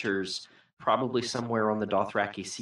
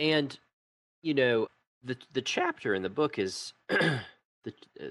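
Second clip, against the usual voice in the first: voice breaking slightly; 4 semitones higher than usual. Discussing a book chapter, the speaker's voice cracks mid-sentence: voice cracking. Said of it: "my teenage voice just cracked there a little bit".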